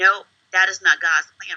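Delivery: tearful, crying voice. Retelling pleading with a records clerk while crying: retelling own crying plea. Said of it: "So I'm crying and tears and snot".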